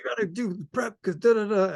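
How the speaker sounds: high, freaked-out scolding tone.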